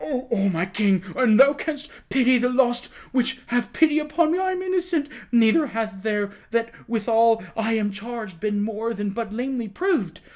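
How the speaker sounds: high, broken, terrified imploring pleading. A condemned prisoner appeals to the king for mercy, imploring in broken, terrified phrases. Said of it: "The prisoner clapped his hands together with sudden energy and wrung them despairingly at the same time, appealing imploringly to the king in broken and terrified phrases".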